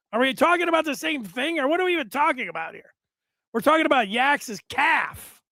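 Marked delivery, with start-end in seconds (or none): 3.6-5.4 worked-up, exclaiming delivery. Answering a question about what they are even talking about, yelling. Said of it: "I don't know why I'm yelling like that".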